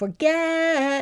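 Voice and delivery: for-GET, stress drawn out. Spelling lesson asking which part of forget is louder: stress on get in forget. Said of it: "I think the get was a lot louder and longer".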